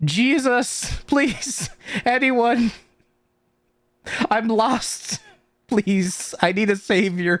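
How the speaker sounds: crying and pleading. Game master voicing a goblin calling out for help, crying and pleading. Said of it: "but also crying and saying".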